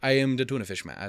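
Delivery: put-on German-accented character voice. Voicing a man in his story who calls himself the Tunafish-man, German accent. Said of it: "He's German now".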